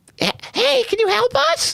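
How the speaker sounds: put-on very high, slow, slightly rough little kid's voice. Narrating a scene, voicing a little boy running up for help, small child voice. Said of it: "maybe six or seven years old".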